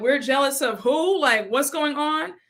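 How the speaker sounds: plain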